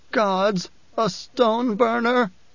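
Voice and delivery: high, frightened whimper. Reading fiction aloud, an unnamed person reacts to a stone burner: whimpering. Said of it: "someone whimpered".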